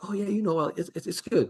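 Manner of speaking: bashful, awkward, fumbling, soft and high. The speaker recalls meeting a loud online personality who was shy in person; imitating a shy, awkward man. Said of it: "he was like this shy person, awkward person".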